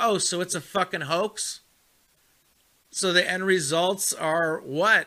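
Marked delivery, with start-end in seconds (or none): none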